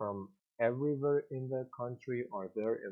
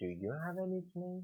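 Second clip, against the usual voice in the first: rising yes-no tune on nickname; 8 semitones higher, 5 dB quieter than usual. Example of a yes-no question in a lesson: rising intonation on nickname. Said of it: "the intonation is rising".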